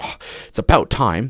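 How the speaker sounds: put-on acted-out, mildly annoyed, impatient child voice. Acting out a son's reply when dinner is late: imitating an annoyed son. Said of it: "He's a little annoyed".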